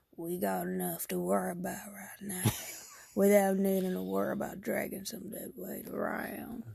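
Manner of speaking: gruff cowboy character voice. Voicing a character described as a gruff cowboy: gruff cowboy voice. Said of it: "a gruffer, in his thirties cowboy".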